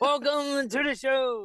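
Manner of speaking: very high, drawn-out circus ringmaster announcer voice. Describing how someone sounds doing the show intro, circus intro announcer voice. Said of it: "circus in, like, intro guy".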